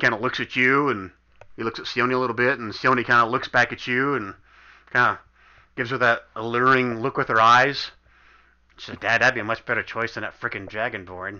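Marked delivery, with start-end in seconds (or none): 9.0-11.4 low mutter under breath, lower and quieter. Voicing a daughter muttering to her father: muttering under her breath. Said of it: "she says under her breath".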